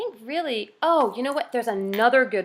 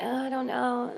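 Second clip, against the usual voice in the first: slow, faltering, unconfident, groping for words; 6 dB quieter than usual. Showing how lacking confidence sounds: unconfident, unsure voice. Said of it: "if you sound like".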